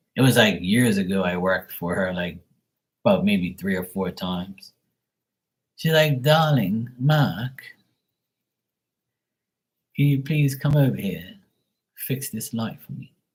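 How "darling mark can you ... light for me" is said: put-on plummy, posh upper-class older lady voice. Speaker recalls an older lady he worked for calling him over; imitating posh older lady. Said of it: "very like posh and she was an older lady".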